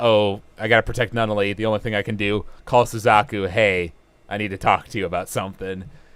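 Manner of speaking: normal talking voice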